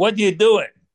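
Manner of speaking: high, loud, yelled-out voice.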